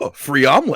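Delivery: ordinary delivery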